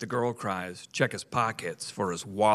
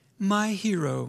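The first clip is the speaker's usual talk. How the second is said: crying out, very high-pitched; 11 semitones higher than usual. A woman answers a man who offers to look at her engine, exclaiming. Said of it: "she exclaimed".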